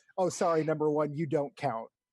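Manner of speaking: ordinary delivery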